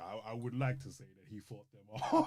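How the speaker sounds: silky, smooth narrator voice. Retelling a film scene's narration: Morgan Freeman voice. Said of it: "how silky and smooth his voice is".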